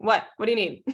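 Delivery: mean, unfriendly phone voice, not smiling. Showing how she sounds on the phone when not smiling, mean-sounding phone voice. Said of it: "I sound mean on the phone".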